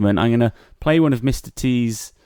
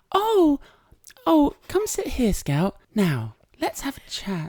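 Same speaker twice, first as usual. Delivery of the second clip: very high, lilting, sing-song nursery-teacher voice; 4 dB quieter than usual. Teasing the other speaker by copying how they talk, in their nursery voice. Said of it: "What's my nursery voice?".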